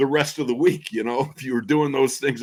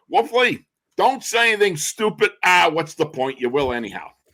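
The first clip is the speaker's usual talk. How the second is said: high, squeaky pitched-up voice; 5 semitones higher than usual. Retelling a broadcaster's joke on the phone: Myron Cope squeaky high voice. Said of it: "he had that squeaky high voice".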